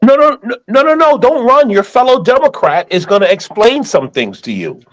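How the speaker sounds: playful, teasing voice.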